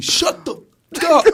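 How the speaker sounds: very loud, shrill, drawn-out high shout. Retelling a confrontation with a man in a car, retelling own yell. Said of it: "and I'm like yelling".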